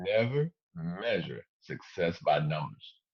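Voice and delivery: slow, deliberate, each word clearly separated and emphasized. Speaking to an online audience, repeating a key point, said slowly. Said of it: "I'm gonna say that slow".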